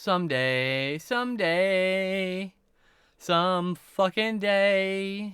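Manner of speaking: loud, very slow, poor voice. Speaker jokes about a chore put off for months, in a really bad loud voice. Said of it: "really bad loud voice".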